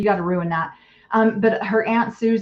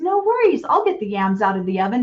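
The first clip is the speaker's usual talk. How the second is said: sunny, bright, smiling-sounding, sing-song cheerful voice. Retelling what a wife said in a home video: imitating a cheerful, smiling tone. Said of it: "she just said it with the happiest smile on her face".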